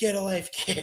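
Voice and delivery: sneering, scary, tough wrestler-style voice. Imitating Brock Lesnar saying the line with his smirk: imitating Brock Lesnar, scary smirk. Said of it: "his scary smirk that he does".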